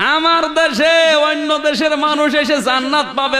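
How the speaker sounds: eager shouting.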